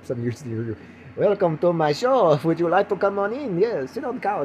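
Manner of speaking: put-on Eastern European accent. Playing a cheerful talk-show host welcoming a guest onto the show, in a comic accent. eastern european accent. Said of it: "I don't know why I sound like I'm some Eastern European country".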